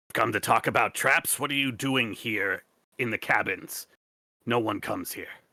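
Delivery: throaty, guttural, hissing cat-creature voice. Game narrator voicing a crossbow-wielding creature questioning the party, in a guttural hissy cat voice. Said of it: "in a kind of guttural, hissy cat voice".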